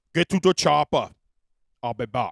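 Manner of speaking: low, dropped, dramatic movie-line voice. Showing listeners how he talks now, in an Arnold Schwarzenegger voice. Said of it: "That's why Arnold Schwarzenegger talks the way he does".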